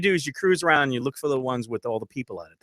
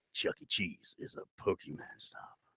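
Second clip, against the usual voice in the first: put-on slow, whispery, breathy, creepy old man voice; 6 semitones lower, 12 dB quieter than usual. Asked to say Chuck E. Cheese differently: creepy old man voice. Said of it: "let me say it like a creepy old man".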